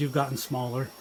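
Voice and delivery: ordinary delivery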